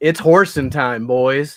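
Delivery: loud rallying in-character battle cry yell. Playing a character stomping out of a trailer: yelling in character. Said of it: "I pull out my ball and I yell".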